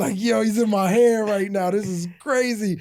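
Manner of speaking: gleeful, amazed, beaming delight. Retelling holding his newborn son for the first time: imitating own amazed grinning self. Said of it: "I'm holding you and I'm cheesing".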